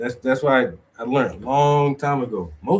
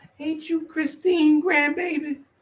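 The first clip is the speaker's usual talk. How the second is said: put-on very high-pitched old lady voice. Retelling how an old lady stranger recognized him: imitating an old lady. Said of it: "some old lady walk by and be around you like".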